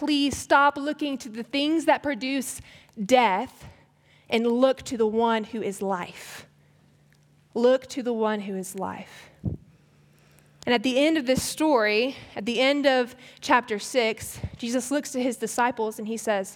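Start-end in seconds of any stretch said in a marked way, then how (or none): none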